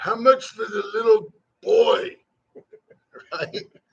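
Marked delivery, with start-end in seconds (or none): 0.0-2.2 comic movie-villain character voice. Describing a best-intro clip, he does a Fat Bastard voice. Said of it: "of fat bastard in it".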